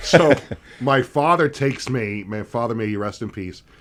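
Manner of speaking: usual speaking voice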